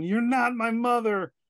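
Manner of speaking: very high, drawn-out horror-film yell. Re-enacting answering a phone call from mother during their Exorcist game: retelling a yell. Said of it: "And I yell into the phone".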